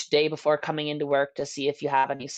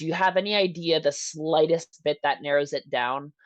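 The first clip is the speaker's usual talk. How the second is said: ordinary talk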